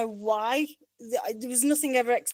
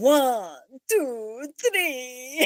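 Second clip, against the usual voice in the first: not-great, rough put-on vampire voice. Talking about a Count toy, count aloud in a Count von Count impression. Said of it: "that wasn't the best impression I've ever done of him".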